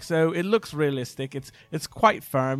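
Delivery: put-on newsreader-style British accent. Retelling a movie scene where a news anchor speaks: imitating a British accent. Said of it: "He's got a British accent".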